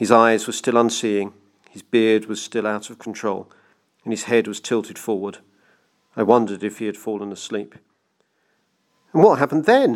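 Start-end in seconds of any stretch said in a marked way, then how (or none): 9.1-10.0 high, pressing, impatient, insistent tone. The narrator presses an old tramp who has fallen silent, demanding. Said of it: "I demanded".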